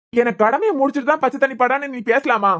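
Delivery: ordinary delivery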